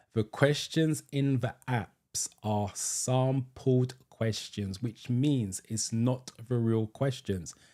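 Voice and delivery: very slow, deliberate, drawn out word by word. Repeating a point about app test questions, said really slowly. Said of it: "I'm going to say it really slowly".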